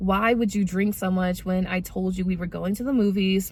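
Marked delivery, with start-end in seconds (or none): none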